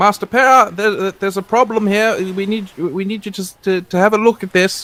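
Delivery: high, put-on chav accent. A player using a persuasion skill to alert Master Para to a problem, put-on chav accent. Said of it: "my best uh, chav voice".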